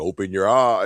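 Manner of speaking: ordinary talk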